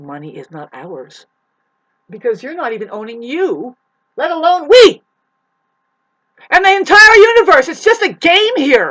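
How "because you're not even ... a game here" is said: booming, swooping, rising, full-volume yelling. Speaking to an audience and apologizing for yelling: yelling. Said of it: "I'm sorry about this yelling".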